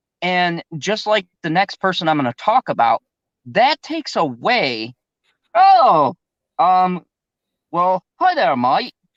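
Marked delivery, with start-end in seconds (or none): 7.7-8.9 bad put-on Australian accent, higher pitch. Greeting a guest named Melissa: terrible Australian accent. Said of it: "I do a terrible Australian".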